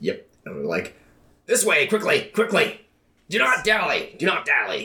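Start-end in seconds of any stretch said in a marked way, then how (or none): 1.4-4.9 very high-pitched, put-on goblin voice. A player has an imp shout from down a hallway: goblin voice. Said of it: "In the goblin's voice".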